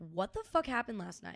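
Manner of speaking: normal talking voice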